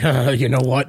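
ordinary talk, nothing marked

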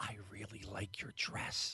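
put-on creepy voice, very quiet, low, murmured. Retelling what she said while hugging a woman: mock-creepy voice. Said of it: "like as creepily as possible".

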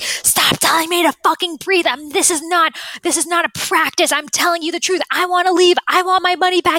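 acted-out screaming. Retelling a woman who was told to breathe: retelling a scream. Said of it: "Like just screaming at her".

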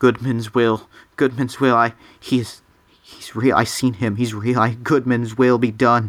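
rambling, monotonous mumble, words spilling together. Voicing a disturbed old man in a room with guards: mumbling. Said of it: "And he's just mumbling".

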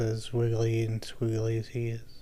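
soft, slowed quiet voice.

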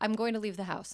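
level, deadpan voice with no emotion at all. Acting out a line from a quarrel, in a put-on deadpan. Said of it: "repeat your request at a total deadpan way".

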